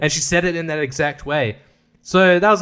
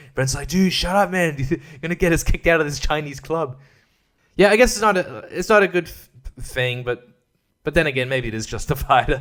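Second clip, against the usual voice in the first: usual speaking voice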